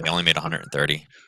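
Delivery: sarcastic tone. Joking about bank profits to another speaker: sarcastic tone. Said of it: "Was that sarcasm?".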